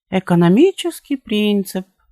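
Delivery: very high, sweet little drawn-out drawl. Reading a story aloud, she repeats a phrase: drawled in a sweet little voice. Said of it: "протянула она симпатическим голоском".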